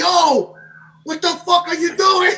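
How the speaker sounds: high, loud, drawn-out screamed outburst. Retelling how the other speaker got out of the car: imitating someone screaming. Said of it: "you started screaming".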